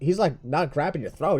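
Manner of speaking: usual speaking voice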